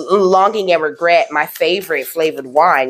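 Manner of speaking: ordinary talk, nothing marked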